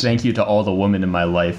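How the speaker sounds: ordinary delivery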